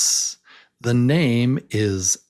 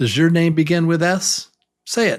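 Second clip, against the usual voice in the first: plain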